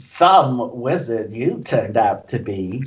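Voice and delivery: low, slow, deliberate, condescending put-down tone. Voicing a character in a tabletop game who shakes his head at the players, condescending. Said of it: "He's being all condescending to everybody".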